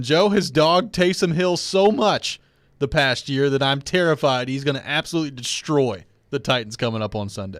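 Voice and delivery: ordinary talk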